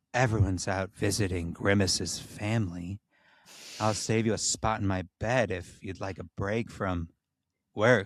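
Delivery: seductive, sultry, intimate, inviting tone. Narrating Ronald's line as he presses closer to the phone; hushed, sultry voice. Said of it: "voice now both hushed and practically sultry".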